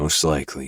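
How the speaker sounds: plain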